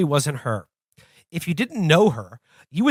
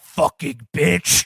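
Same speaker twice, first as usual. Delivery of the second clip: deep, low possessed voice; 3 semitones lower than usual. Reading a story aloud, voicing words spoken through a woman in a deep voice. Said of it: "a deep voice said through her".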